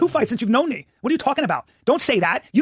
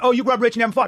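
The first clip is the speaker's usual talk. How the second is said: ordinary talk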